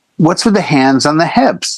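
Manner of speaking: normal talking voice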